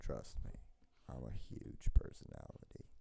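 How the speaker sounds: flat, level, expressionless deadpan monotone. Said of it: "I say that as mon-, monotone as possible".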